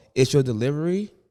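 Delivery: ordinary talk, nothing marked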